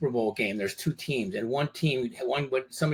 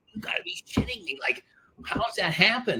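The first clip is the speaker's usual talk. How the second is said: very high-pitched, swooping, pissed-off angry outburst; 9 semitones higher than usual. Retelling a past reaction after hearing the news: retelling own angry outburst. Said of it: "I was pissed".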